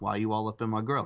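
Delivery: ordinary talk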